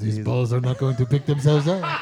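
loud, fake seductive French accent. Acting out a man fanning cash at someone: put-on sexy French accent. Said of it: "now he's French".

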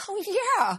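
high, excited, agreeable tone.

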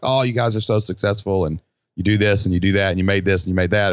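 ordinary talk, nothing marked

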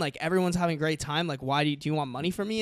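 ordinary delivery

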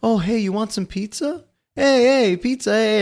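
gentle, sweet, high voice, easy and unhurried. Retelling how Kemper acts in the show: imitating Kemper, gentle and sweet. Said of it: "he does a great job of flipping the switch".

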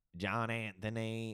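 put-on Southern accent. Retelling what an older coworker said at work, imitating his southern accent. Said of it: "Southern accent".

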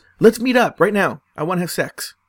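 loud, pushy, super aggressive put-on delivery. Retelling a guy's messages demanding to meet: imitating a super aggressive guy. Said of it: "Like, super aggressive".

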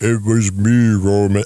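very low, slow, drawn-out hulking giant voice. Imitating a wrestler revealing himself to Roman Reigns: Erick Rowan impression sounding like Andre the Giant. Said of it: "I always sound like Andre the Giant when I do his impression".

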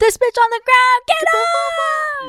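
mock very high shrill screech, "off" stretched long. Retelling what a video showed: imitating Ren screaming. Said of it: "a video of Ren, like, screaming".

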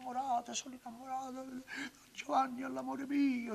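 very high, shrill shrieking fit. Describing a woman's crisis at home, imitating her screaming.

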